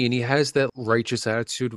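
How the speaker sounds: plain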